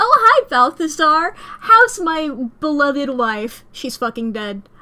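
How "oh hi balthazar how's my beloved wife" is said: loud, bright, cheery, drawn-out delivery. Talking during a game, the speaker acts out Romeo greeting Balthazar: Romeo impression. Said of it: "That's the noise that Romeo makes".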